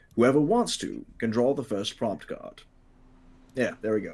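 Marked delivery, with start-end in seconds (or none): 0.2-2.6 fluent, even, smooth, flowing delivery. Retaking the game instruction with smooth flowing delivery. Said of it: "get the flow right that time".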